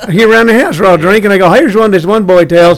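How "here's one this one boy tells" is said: usual speaking voice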